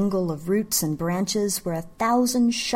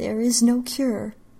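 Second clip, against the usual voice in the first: plain mumbled, muttered delivery; 4 semitones higher than usual. A sleepless woman sitting on the bed in the dark: muttering. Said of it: "she muttered".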